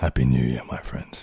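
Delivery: really deep, very low voice. Answering a viewer's request to say a greeting: really deep voice. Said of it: "Can you say with a really deep voice".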